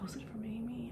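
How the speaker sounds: high, soft, quiet whisper.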